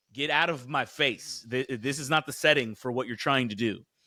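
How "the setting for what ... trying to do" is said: normal talking voice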